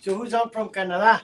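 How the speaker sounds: "Canada" said with a Spanish accent. Asking who is on from canada: spanish accent. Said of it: "you said Canada in a, um, s-, Spanish accent".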